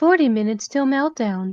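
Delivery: synthesized, robotic computer-like voice. Voicing a warning line after the narrator names a synthesized voice: synthesized computer voice. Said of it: "a synthesized voice said".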